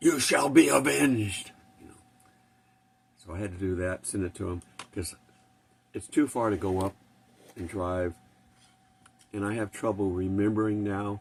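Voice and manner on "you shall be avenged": tough, gruff, rough, slow, loud voice-over. Recording a voiceover as a Klingon, tough, rough Klingon voice. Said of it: "this tough, rough voice".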